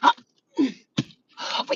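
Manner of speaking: real, unpolished orgasm noises, broken off. Acting out how a real climax sounds: imitating a real orgasm. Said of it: "That's an orgasm".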